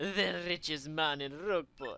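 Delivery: put-on Spanish accent.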